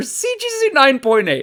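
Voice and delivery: somewhat loud, swooping, excited outburst. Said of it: "Sorry if that was a little loud into the mic".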